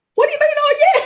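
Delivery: play-acted near-hysterical, very high-pitched, disbelieving voice. Retelling answering her husband's reply: retelling her near-hysterical reply. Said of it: "I'm nearly hysterical".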